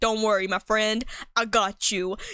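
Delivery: odd deep voice for a dog. Imagining a story where a protective dog answers its owner, weird deep dog voice. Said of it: "give them a weird deep voice".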